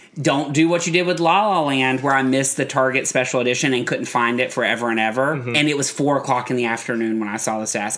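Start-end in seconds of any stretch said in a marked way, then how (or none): 0.2-2.0 mock-threatening tone, higher pitch. Retelling a warning someone gave the speaker, mock-threatening tone. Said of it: "in the most threatening tone".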